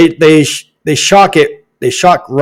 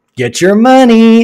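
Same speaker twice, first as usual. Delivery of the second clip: mocking, sarcastic tone with raised pitch; 8 semitones higher than usual. Reacting to a comment about stomach cancer payouts: sarcastic. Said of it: "I'm being sarcastic".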